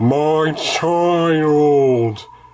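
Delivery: put-on low voice, drawn-out child. Reading a woman's words as her eyes glow green: deep voice. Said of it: "she said in a d-, a deep voice".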